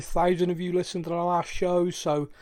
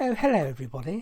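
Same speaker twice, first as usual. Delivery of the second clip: plummy, proper, very posh phone voice. Showing how Kaylee opens the podcast: Kaylee's very posh phone voice. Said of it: "very, very posh phone voice".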